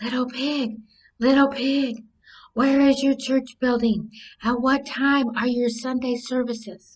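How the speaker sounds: soft, hushed half-whisper. Narrating a story, voicing the wolf at the little pig's door, half-whispering.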